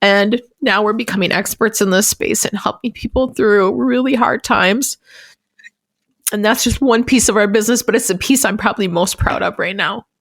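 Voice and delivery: crying, tearful, voice breaking. Talking with Beth on their New Year's Eve episode, crying, voice breaking. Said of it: "I don't know why I'm crying".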